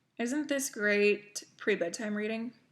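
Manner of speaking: thick, heavy, dripping sarcastic tone. Holding up a war novel as bedtime reading: heavy sarcasm. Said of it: "she says with a heavy dose of sarcasm".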